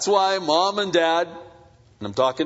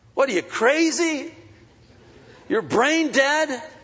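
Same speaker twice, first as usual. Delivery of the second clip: very high, disbelieving, indignant, condescending talking-down; 9 semitones higher than usual. A speaker acts out his own reaction, mock-indignant and condescending. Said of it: "I get this kind of indignant".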